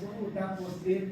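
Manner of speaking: plain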